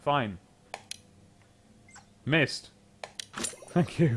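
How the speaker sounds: half-whispered, sarcastic under-the-breath mutter. Player answering a game tutorial's instructions, sarcastic. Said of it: "I know I'm sounding all sarcastic".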